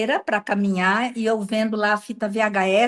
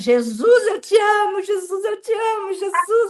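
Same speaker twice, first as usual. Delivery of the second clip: put-on very high, stretched-out shouting; 10 semitones higher than usual. Recalling fearing what her husband would think, she retells her own shouting. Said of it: "eu gritando".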